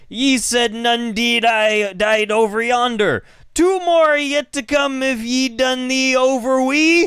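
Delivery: put-on pirate voice mixing Irish and Jamaican accents. Retelling what a guy in a movie said: mix of Irish and Jamaican pirate. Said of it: "a mix of, like, Irish and, like, Jamaican pirate".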